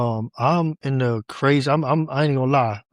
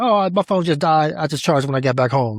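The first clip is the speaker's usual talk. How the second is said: mock casual, unbothered, breezy, nonchalant tone; 2 semitones higher than usual. Retelling what a daughter said last time, imitating a nonchalant tone. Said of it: "she's so nonchalant about it".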